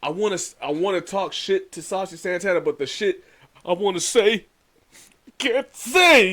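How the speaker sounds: hurt, high, slow lament on the edge of tears. Retelling what someone said while tearing up: imitating Academics tearing up. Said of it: "he started tearing up because he was like".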